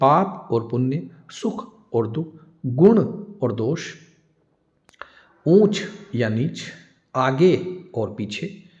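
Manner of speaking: slow, deliberate, word-by-word dictation pace. Dictating word pairs to listeners writing them down, slow dictation. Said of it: "धीरे धीरे बोल रहा हूं".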